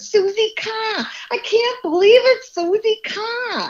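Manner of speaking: put-on very high, heavy Boston accent. Retelling how Mark Wahlberg ran up to greet her, Mark Wahlberg heavy Boston accent. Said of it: "he has this really heavy Boston accent going".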